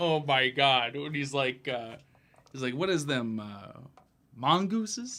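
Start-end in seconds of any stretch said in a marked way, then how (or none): 2.7-5.2 narrated like a nature documentary. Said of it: "narrating Planet Earth".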